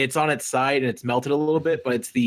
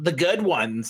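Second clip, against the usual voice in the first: mock obnoxious voice, higher pitch; 3 semitones higher than usual. Retelling what Nolan answered about which episodes to show, obnoxious Nolan voice. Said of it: "your Nolan voice is a default to a really obnoxious asshole sounding voice".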